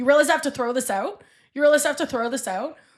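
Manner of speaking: yelling, on the verge of tears. Speaker retells a waitress yelling at a man, retelling a waitress yelling. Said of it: "and she yells at him".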